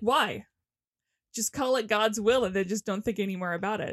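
ordinary delivery

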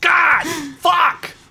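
very high-pitched, furious, angry blurted outburst. Game narrator voicing the player's character before storming off, in an angry outburst.

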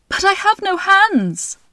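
very high, loud, exasperated cry. A woman feeling in the water for her fallen baby gives an exasperated cry. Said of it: "cried out in exasperation".

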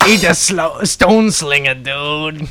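gravelly-throated, dim, toothless oaf voice.

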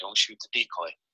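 soft, hushed half-whisper under the breath. Retelling a hunt, the speaker repeats his instruction to the archer: half-whispered. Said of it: "and I just whispered".

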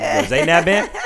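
high, loud, eager voice.

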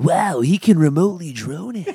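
high, hyped strip-club DJ announcer voice. Riffing with podcast co-hosts, one slips into a stripper DJ voice. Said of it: "You have the best stripper DJ voice ever".

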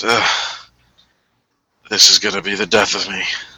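very tired, exhausted-sounding voice. Voicing a character collapsing onto a bed: really tired. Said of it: "really tired and just collapses onto bed".

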